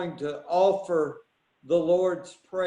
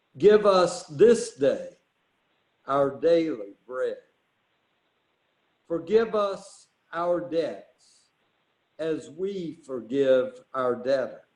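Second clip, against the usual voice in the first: very slow, measured, unhurried delivery; 3 semitones lower than usual. Leading the Lord's Prayer as the closing prayer tonight: praying very slowly. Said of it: "I'm just going to pray it very slowly".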